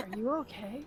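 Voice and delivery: muttered quietly under her breath. Voicing a character who notices someone, muttering under her breath. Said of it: "under her breath, she's like".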